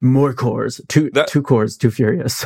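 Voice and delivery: put-on monster truck announcer voice. Bringing back a funny voice after the other speaker praised it, monster truck announcer voice. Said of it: "my monster truck announcer voice".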